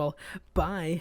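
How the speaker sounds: Japanese-character style voice. Retelling own goodbye when walking away: like a japanese character saying bye. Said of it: "I do it like a Japanese character".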